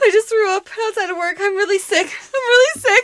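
high, panicky voice between crying and panic. Retelling a phone call after being sick outside work, imitating panicked crying. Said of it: "in between crying and like panic mode".

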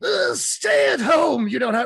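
very loud, high, slow, drawn-out comic-book villain voice. Retelling a book where the Joker keeps the hero messed up: Mark Hamill Joker voice. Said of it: "solid Mark Hamill".

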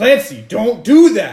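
loud, high, slowed-down yell.

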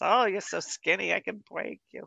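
put-on New York mother voice.

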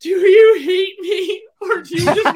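crying wail, very high, loud and slow. Retelling how she burst into tears in front of the class, imitating her tearful pleading. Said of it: "she just started bursting into tears".

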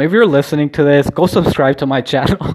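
laughing through the words, can't keep a straight face. Asking listeners to subscribe to the channel, laughing while talking. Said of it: "I can't even say that with a straight face".

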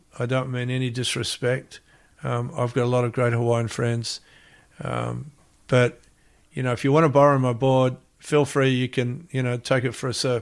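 usual speaking voice

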